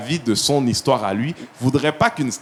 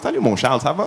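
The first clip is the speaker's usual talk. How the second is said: thick, laid-on, put-on Quebec French accent; 2 semitones higher than usual. Talking about job interviews, showing how he greets the interviewer, strong Québécois accent. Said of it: "Je vais le sortir mon accent québécois".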